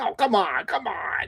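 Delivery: high, drawn-out, imploring begging tone. Imitating the whole italian squad coming over together, mock pleading. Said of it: "like pleading".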